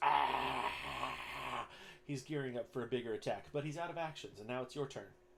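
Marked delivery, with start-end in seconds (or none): 0.0-1.7 loud monster scream. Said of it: "and he just screams".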